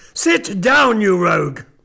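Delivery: sudden harsh, dog-like barking cry. An old gentleman cries out to his nephew, harsh barking voice. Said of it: "cried the old gentleman in a sudden harsh voice, like the barking of a dog".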